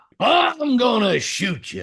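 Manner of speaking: high, squeaky cartoon voice with big swooping pitch swings. Imagining the cartoon cowboy making an offer you can't refuse: Yosemite Sam voice. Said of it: "How would Yosemite Sam make an offer".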